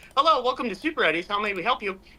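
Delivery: high robotic voice. Playing a robot answering a walkie-talkie: robot answering as fast-food clerk. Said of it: "he picks up the walkie-talkie and says".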